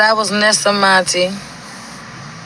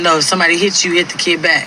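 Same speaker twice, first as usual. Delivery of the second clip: ordinary delivery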